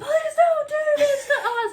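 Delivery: very high, very loud, shrill pleading yell. Retelling how a caught partner begs on the ground: imitating a yelling, begging ex. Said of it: "pleading and begging and yelling".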